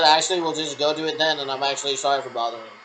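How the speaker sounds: plain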